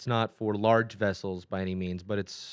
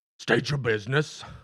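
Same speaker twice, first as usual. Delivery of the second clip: monstrous orc character voice; 3 semitones higher than usual. Game master voicing an orc who meets the players' boat at the dock: orc voice. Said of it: "an orc fellow comes up to you and says".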